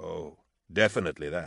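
plain reading voice

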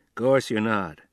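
ordinary delivery

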